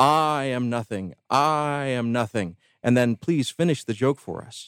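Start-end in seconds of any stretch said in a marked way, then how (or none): 0.0-2.6 proclaimed with even greater, heavy emphasis. Telling a joke, acting out the cantor copying the rabbi, with even greater emphasis. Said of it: "with even greater emphasis".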